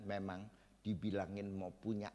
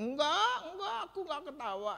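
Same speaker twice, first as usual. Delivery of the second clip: mock flustered, frightened voice, very high; 9 dB louder than usual. Retelling Sarah denying she laughed, Sarah's mock-scared denial. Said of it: "Wah dia jadi takut".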